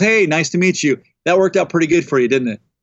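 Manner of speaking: put-on dry sarcastic tone. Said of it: "I wasn't really prepared for the [name] sarcasm".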